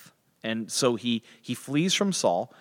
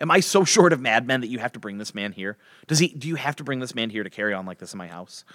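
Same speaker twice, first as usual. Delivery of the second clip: ordinary talk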